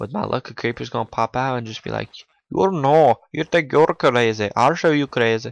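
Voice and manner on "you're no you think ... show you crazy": loud put-on Indian accent, best attempt. The speaker imagines a creeper popping out to say this, in an Indian accent. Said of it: "I really hope that sounds Indian on the recording".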